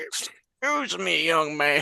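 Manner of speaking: put-on slow, very elderly man voice. Playing a character disguised as a really old man, walking in and addressing a young man: old man voice. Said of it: "disguise self as a really old man".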